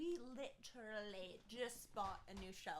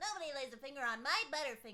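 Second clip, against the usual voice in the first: put-on loud, high-pitched shout in a cartoon-kid voice; 5 semitones higher, 8 dB louder than usual. Trying out voices, speaker does a season one Bart voice. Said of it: "That's a very good like season one Bart".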